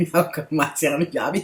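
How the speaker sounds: talking through laughter. Talking to viewers, laughing while talking. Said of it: "I'm laughing, you guys".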